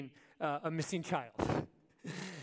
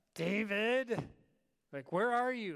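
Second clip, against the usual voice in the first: play-acted irritated, pitched-up, drawn-out calling-out; 5 semitones higher, 3 dB louder than usual. Retelling calling out for David when he wouldn't come, in a mock-annoyed tone. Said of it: "it always started with that kind of annoyed tone".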